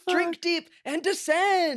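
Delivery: very high-pitched character voice. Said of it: "Mister Beast voice".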